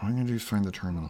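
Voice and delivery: soft, hushed, half-whispered stage whisper. Retelling a scene where Mayfield tells Mando the plan: imitating a half-whisper. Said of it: "kinda, like, whispering to him".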